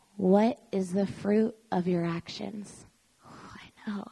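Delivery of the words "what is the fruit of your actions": put-on gentle voice, lower and quieter. Speaker recounting a question heard one morning while feeling ill: retelling gentle words. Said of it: "so gently".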